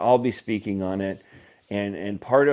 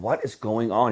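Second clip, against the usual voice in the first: fed-up, exasperated, frustrated tone. Retelling a caller's words after other companies said no: imitating a frustrated caller. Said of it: "you could just feel the frustration in his voice".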